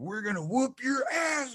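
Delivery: put-on, very high, rising, fired-up, pumped-up scream. Retelling getting pumped up at a close game, re-enacting a scream. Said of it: "and I'm screaming".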